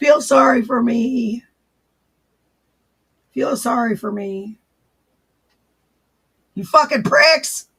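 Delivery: loud, fast, hoarse, raspy rant. Imitating a woman now that the voice is raspy: raspy voice imitating her. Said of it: "Now that my voice is raspy, I can sound more like her".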